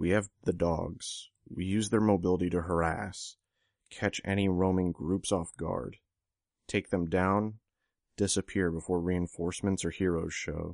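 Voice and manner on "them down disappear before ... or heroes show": plain reading voice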